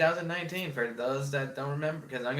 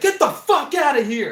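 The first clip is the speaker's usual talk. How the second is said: mock furious yell, much higher and louder; 10 dB louder than usual. Retelling how dr. k threw out a backpack thief, imitating his furious yell. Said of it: "this motherfucker almost lost his shit".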